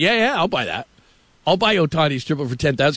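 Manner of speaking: normal talking voice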